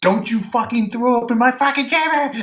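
very high-pitched, intense screaming. Telling a story, acting out people screaming at a man, retelling a scream. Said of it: "they're screaming at him".

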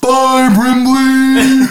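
high-pitched giant narwhal creature voice. Describing a goodbye scene, voicing a giant narwhal rising from the ice. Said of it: "giant narwhal, and he goes".

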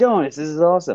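thrilled, excited exclamation, bursting with excitement. Retelling opening a box in the garage when super young, retelling being so excited. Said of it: "I was so excited".

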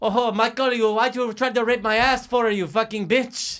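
put-on French accent. Trying a French voice after being asked for one: put-on French accent. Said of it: "wait, French".

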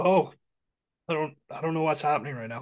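choking, strained voice. Stopping mid-chat with a dry spot in the throat: throat irritation, tearing up. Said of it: "It's like a dry spot in my throat".

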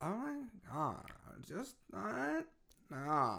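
put-on very slow, soft, swooping, drawn-out Valley Girl drawl. Imitating how girls still talk these days, valley girl voice. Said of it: "Valley Girl".

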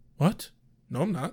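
mock deadpan tone. Retelling a story, the speaker acts out a man's response: mock-deadpan response. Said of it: "his response of like deadpan".

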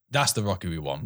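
normal talking voice

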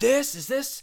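shrill, very high screaming yell. Retelling how a man started screaming at someone, retelling someone screaming. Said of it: "Mr. Turner starts screaming at him".

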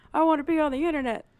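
put-on high-pitched, fast, rattled-off young kid voice. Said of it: "Just like".

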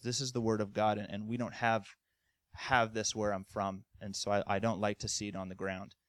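ordinary talk

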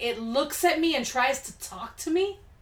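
ordinary talk

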